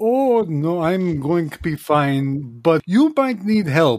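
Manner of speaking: slow, deliberate human-sized flea voice. Game narrator voicing a human-sized flea answering the party: Sanguinitsky, human-sized flea voice. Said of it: "And it should be noted that [name] is proudly a flea. He is a big one. He's like human sized".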